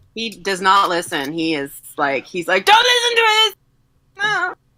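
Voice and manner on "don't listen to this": very high, pushy, cranked-up overtalking voice. Voicing the sheep shouting over the wolf: Bobcat Goldthwait voice. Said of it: "Now it seems to become Bobcat Goldthwait".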